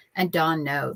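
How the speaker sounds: ordinary talk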